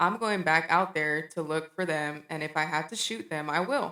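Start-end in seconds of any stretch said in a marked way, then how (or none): none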